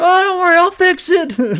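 very high, loud, drawn-out words broken by laughs. Retelling a man's reply after being told to fix the truck: imitating someone laughing hard. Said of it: "dying in between laughs".

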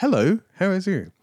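put-on very English accent, very high, slow and drawn out. Retelling how a very English teammate greeted everyone: imitating Lucy's very English voice. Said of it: "like a very, very young Mary Poppins".

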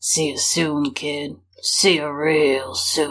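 low, grimy voice like marbles in the mouth. Retelling a scene, doing a man's line to himself: grimy, marbly voice. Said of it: "that grimy, marble voice".

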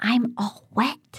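soft, hushed, under-the-breath whisper. Retelling a moment in a quiet theater, the speaker quotes themselves to Papa, whispering. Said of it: "And I'm whispering".

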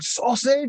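furious one-word outburst, acted. Retelling a Blackadder scene where he missed a word: imitating an angry Blackadder. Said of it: "he's really angry 'cause he's missed".

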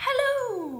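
high, laughing, teasing mock impression.

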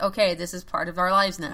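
ordinary talk

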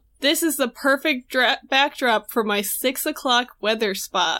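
normal talking voice

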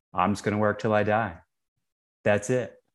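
ordinary delivery

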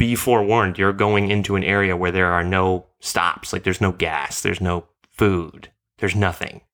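ordinary delivery

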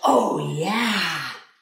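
booming mascot-style pitchman voice. Reacting to being named officiant and DJ; sounding like the Kool-Aid Man. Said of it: "I just sounded like the Kool-Aid guy".

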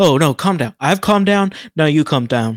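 insisting, lecturing manner. Retelling how a player policed another's tone: imitating Jared policing tone. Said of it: "He's like".

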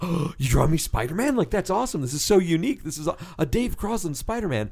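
put-on, high, gushing, bubbling-over excitement. Describing the speaker's character's reaction in an episode they wrote, acting all excited. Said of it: "my character's like all excited".

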